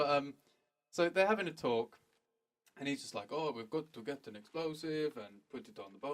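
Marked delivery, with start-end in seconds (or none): 3.3-6.1 soft-spoken, put-on Russian accent. Retelling what a disguised character said during a conversation: russian accent. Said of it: "You don't need to talk in the Russian accent anymore".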